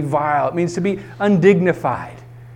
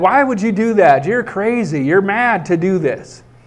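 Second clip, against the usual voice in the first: normal talking voice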